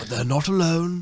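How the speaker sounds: put-on nature documentary narrator voice. Showing the others the things he says, then daring them to try, do a David Attenborough impression. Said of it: "But he also says".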